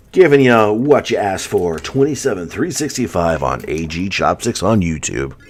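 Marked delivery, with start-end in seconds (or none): 1.8-5.3 put-on radio announcer voice, on-air read. Talking to youtube viewers about a viewer's request, in a radio announcer voice. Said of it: "the radio announcer voice is off now".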